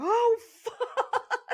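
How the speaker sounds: laughing while talking. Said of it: "And I'm like".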